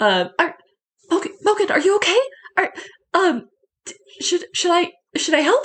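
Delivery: between a yell and a whisper. Narrating the scene, Edith calls down to Mogan in the hole, half-yelling, half-whispering. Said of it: "she kind of like half yells, half whispers".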